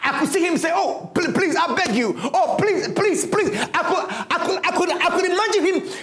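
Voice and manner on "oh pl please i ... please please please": acted desperate pleading tone, higher. Imagining Joseph as he is sold by his brothers: acting out pleading for dear life. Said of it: "pleading for dear life".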